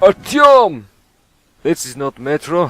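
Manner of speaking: put-on Russian accent, loud, slow. Switching to a joke voice while playing, put-on Russian accent. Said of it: "change to the Russian accent".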